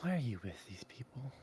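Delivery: whispering. A voice behind you in bed at night asks a question, whisper. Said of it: "a voice kind of just whisper".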